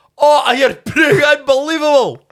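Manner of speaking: very high put-on Scottish accent. Acting out what a Tinder date says, in a Scottish accent. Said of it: "That's a really good Scottish accent".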